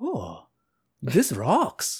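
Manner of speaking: soft, swooping put-on vague European accent. Speaker voices Beethoven's reaction, in a vaguely Euro Beethoven voice. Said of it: "That's my vaguely Euro... Euro voice".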